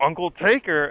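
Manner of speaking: put-on overdone, exaggerated yell, held in check. Retelling a line heard in a trailer: imitating an exaggerated yell. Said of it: "in such an exaggerated tone and, like, at the top of their lungs".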